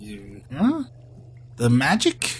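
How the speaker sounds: very slow, drawn-out, puzzled tone. Voicing a character who looks at a player and asks: questioning tone. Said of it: "looks at you, like, questioningly".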